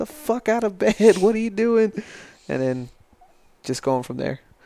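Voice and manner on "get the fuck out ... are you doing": put-on drill instructor voice, very high, shrill yelling. Retelling waking in basic training to the instructor: imitating someone yelling. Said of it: "my M T I just yelling at me".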